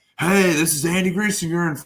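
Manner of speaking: put-on screaming. A man recalls standing outside a house he was hosting, retelling his own screaming. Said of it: "I'd be screaming at my phone like".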